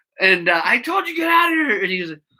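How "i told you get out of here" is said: furious, livid shout, very high-pitched. Retelling confronting a man who came back into the shop: imitating own livid yelling. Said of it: "But I was livid".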